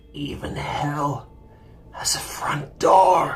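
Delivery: very slow, desperate, whispered hiss. Retelling what a man hissed when pressed, looking toward the hills: retelling a desperate hiss. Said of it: "hissed something in a desperate voice".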